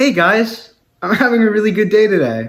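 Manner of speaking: cheerful, upbeat, bright, very high voice. Told by the other speaker to be happy, the speaker demonstrates a happy voice. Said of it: "be happy".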